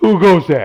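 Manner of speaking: put-on very loud, high, severely drunk slurring voice. Voicing a drunk armored guard who snaps awake: severely drunk guard voice. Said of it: "severely drunk".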